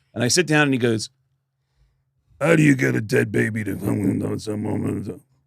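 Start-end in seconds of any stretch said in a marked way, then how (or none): 2.4-5.2 put-on garbled gruff voice, pitched lower. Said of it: "I only recognized the words "dead baby"".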